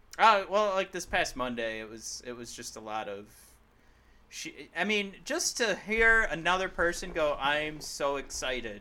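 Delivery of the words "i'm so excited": mock flat, unexcited excitement. Mimicking a wrestler's flat promo line: imitating a flat, unexcited line. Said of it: "it sounds just like that".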